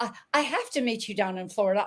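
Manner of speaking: put-on British accent. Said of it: "this British accent just for Jamie Kerr".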